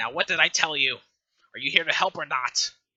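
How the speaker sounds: grouchy, annoyed, cross, grumpy delivery. A game master voices a character stomping toward the players: grumpy. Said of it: "he has this like really grumpy look".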